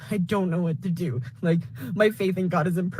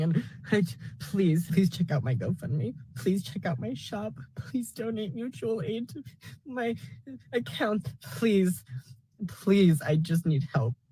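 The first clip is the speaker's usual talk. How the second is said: tearful, pleading voice. Having spent almost all their money on a car, asking for help; crying while talking. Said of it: "I'm tired of breaking down and I can't stop crying".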